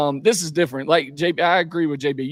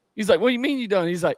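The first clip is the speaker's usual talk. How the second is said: plain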